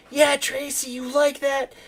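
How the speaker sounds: very high, loud jeering, taunting yell. Retelling yelling at a player while watching a game, retelling a loud yell. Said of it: "and I was yelling like".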